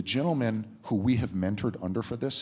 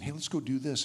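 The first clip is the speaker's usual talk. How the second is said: mock rapid chatter, higher; 4 semitones higher, 3 dB quieter than usual. Showing how a chatty person fires questions at a quiet one: imitating rapid chattering. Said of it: "you start chattering at them".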